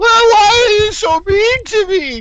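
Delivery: very high, tearful, bawling sobbing wail. Imitating a worker whose boss asks her to do filing: mock bawling. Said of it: "And she'll start bawling".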